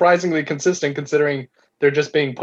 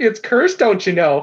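put-on Minnesota-style accent; 5 semitones higher than usual. Mocking a movie's accents by voicing a villager, minnesota accent.

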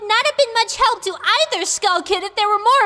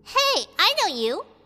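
small squeaky sudden cry; 4 dB quieter than usual. Narrating a story, a rescued creature recognizes his savior, squeaky voice. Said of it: "he squeaked".

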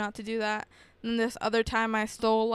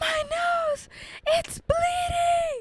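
very high, stretched-out, drawn-out shriek, acted. Retelling a nosebleed in a car's back seat: retelling their own scream. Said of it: "And I started screaming".

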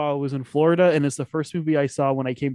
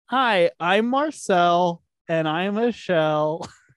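very slow voice, every word drawn out; 4 semitones higher than usual. Showing the others an impression while ranking movies: Marcel impression. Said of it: "let me do my impression".

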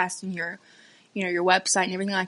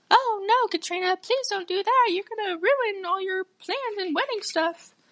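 very high, put-on voice; 13 semitones higher than usual. Retelling what the parents said about eloping: put-on voice imitating parents. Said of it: "sorry for that voice".

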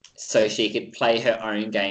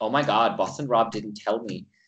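put-on mean girl voice. Imitating someone telling her tribe mates: Mean Girls sort of voice. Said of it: "like a Mean Girls sort of, sort of voice".

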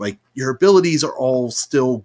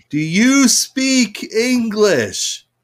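very high-pitched, very slow, painfully drawn-out words; 11 semitones higher than usual. Retelling how a tourist in a game mission asks a question: speaking very slowly. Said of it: "starts speaking very slowly".

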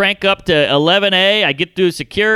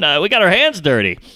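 ordinary delivery

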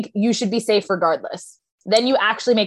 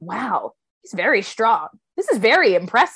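voice full of awe, impressed. Retelling a player's remarks during the challenge: imitating someone in awe. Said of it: "awe to him".

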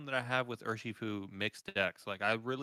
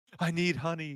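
high, freaked-out cry, pitched up in panic; 7 semitones higher, 4 dB louder than usual. Acting out a cartoon bear panicking like a Top Gun scene: Winnie the Pooh freaking out. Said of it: "he's, like, freaking out".

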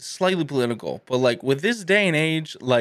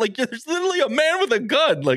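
high-pitched, mock exasperated outburst. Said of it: "I'm like".

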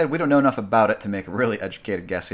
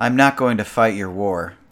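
mock-weak, forceless delivery; 5 dB louder than usual. Repeating a line that was supposed to sound forceful, imitating a forceless line reading. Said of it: "supposed to be like sort of said with force, and it just isn't".

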